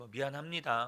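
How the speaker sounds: put-on indifferent tone, without a hint of remorse. Imitating how suspects answer reporters on camera, a mock unremorseful apology. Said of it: "막 이렇게 전혀 죄책감을 느끼지 않는다는 표정과 말투로".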